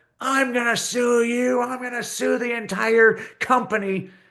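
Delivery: very high, furious, raging outburst. Telling a story, the speaker acts out a woman exploding when Blarney Castle is closed: imitating a woman exploding. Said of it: "this woman explodes".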